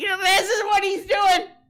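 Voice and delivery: very high-pitched, loud, upset ranting. Joking about starting a drama with another streamer, imitating Jimmy Dore being upset. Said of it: "He'll be Sam Seder and I'll be Jimmy Dore".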